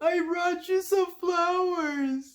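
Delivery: high, dried-up, squeezed, slow, drawn-out voice. Retelling a cartoon scene where a sponge offers flowers: imitating SpongeBob's dried up voice. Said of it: "he uses the funniest voice, of course, his dried up voice".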